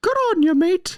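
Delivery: very high-pitched puppet voice. Acting out what the performer would say if he spoke in his Pinocchio voice. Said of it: "if he was speaking in his Pinocchio voice".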